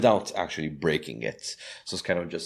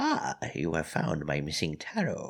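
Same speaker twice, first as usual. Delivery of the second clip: put-on croaky, croaking old woman voice; 2 semitones lower, 4 dB quieter than usual. Voicing an unseen figure behind the listener in the story, croaking voice. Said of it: "you hear a voice that croaks".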